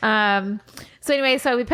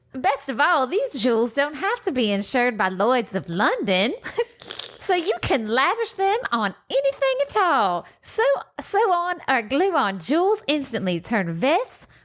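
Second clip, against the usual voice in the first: higher-pitched fake Southern accent; 6 semitones higher than usual. Reading a crafting booklet's words aloud in Suzanne's voice: Southern accent. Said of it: "So she needed a Southern accent".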